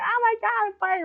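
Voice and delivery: shrill, very high, very slow acted-out scream. Retelling a classroom fire to listeners: imitating their own screaming. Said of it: "literally screaming".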